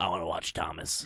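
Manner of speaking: loud, very low, creepy grumbling voice. Retelling what a six-year-old boy asked: creepy grumbly peasant voice. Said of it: "like creepy peasant voice".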